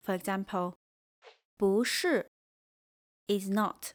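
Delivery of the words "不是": 不 rising in pitch before 是. Mandarin lesson on 不 changing before a falling-tone word: rising tone on 不. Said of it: "before a falling sound word, it becomes rising".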